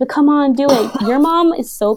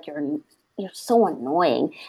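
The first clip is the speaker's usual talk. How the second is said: put-on mutter under breath, lower, quieter; 6 semitones lower, 8 dB quieter than usual. Speaker acts out their own reply to annoying people, imitating muttering under breath. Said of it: "I just say it under my breath".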